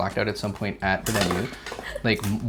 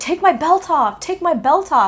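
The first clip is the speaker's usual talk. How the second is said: mock yelling, much higher and louder; 10 dB louder than usual. Retelling how he kept demanding his belt come off, imitating him yelling. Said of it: "he kept yelling".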